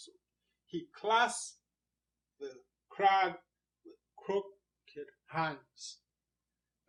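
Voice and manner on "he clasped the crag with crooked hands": clasped, crag, hands stressed hard, ending slowed. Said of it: "That's rhythm being created there".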